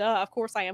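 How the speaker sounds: ordinary delivery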